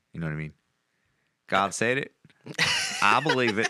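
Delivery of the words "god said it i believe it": put-on American Southern accent, swooping pitch. Speaker wants to say a line in a Southern accent. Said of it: "I want to say that with a Southern accent".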